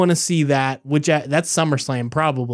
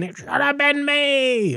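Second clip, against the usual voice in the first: very high, pitched-up voice; 11 semitones higher than usual. Discussing a repeated wrestling promo, quoting the wrestler's line in a Dolph Ziggler impression. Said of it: "I didn't get that high enough".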